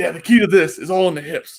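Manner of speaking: put-on announcer voice. Retelling a competitor's impression of a deadlift tip: Kaz impression. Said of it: "he has that perfect Kaz impression".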